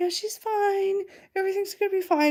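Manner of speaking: mock very high, jittery, freaked-out, nervous voice. Retelling her dad's phone call: imitating a very nervous voice. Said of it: "in sort of a very nervous voice".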